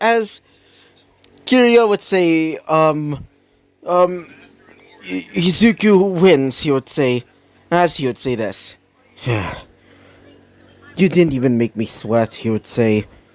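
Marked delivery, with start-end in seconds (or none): 9.2-12.3 cold put-on character voice, slower pace. Retelling what Kiryu would say after a win: imitating Kiryu sounding cold. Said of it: "almost sounding cold".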